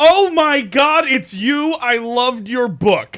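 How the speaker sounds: high, emphatic, drawn-out, gushing excited yell. Speaker recounting meeting someone they hoped to meet, retelling an emphatic yell. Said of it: "Emphatically, I yell out".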